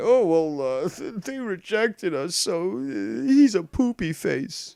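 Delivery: put-on very slow, high, drawn-out babyish whine. Mocking the other speakers as children: mocking childish voice. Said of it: "This is what children say".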